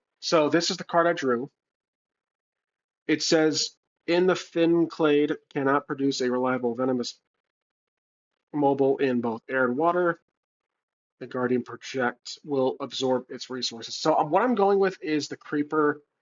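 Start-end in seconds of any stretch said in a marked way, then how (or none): none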